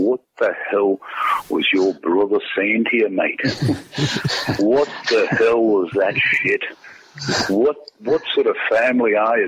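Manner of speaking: put-on rich, thick Irish accent, stern. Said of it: "just in that rich Irish accent".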